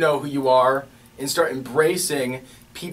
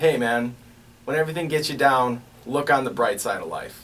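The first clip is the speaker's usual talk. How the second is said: normal talking voice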